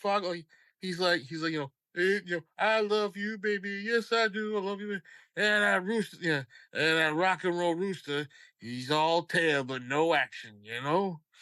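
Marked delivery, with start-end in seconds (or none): 2.0-10.6 slow-paced cartoon rooster voice. Describing a cartoon episode, doing a Foghorn Leghorn voice. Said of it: "Foghorn Leg-, in the episode".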